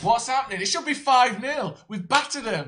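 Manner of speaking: high, slow, disbelieving incredulous rant.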